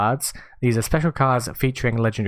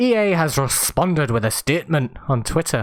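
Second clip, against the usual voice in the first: put-on Scottish accent. Reading out news about a game's statement on Twitter, Scottish accent. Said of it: "I don't know why I went Scottish there".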